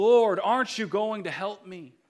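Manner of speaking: very loud, high, desperate, despairing shout. Telling a joke about a man praying for a lottery win: shouting in despair. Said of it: "And so he shouts".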